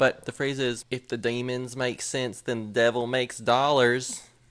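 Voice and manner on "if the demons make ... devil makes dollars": put-on country accent throughout. Sharing a favorite phrase they made up, in a country accent. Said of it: "my favorite phrase to say in a country accent".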